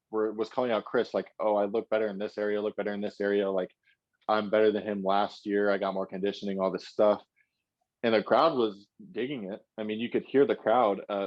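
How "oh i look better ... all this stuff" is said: normal talking voice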